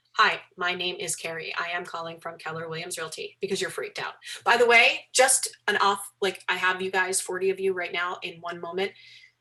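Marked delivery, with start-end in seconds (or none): 0.2-3.4 mock robotic reading voice, quieter. Showing how a scripted phone call sounds read like a robot: mock robotic script reading. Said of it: "talk like a robot".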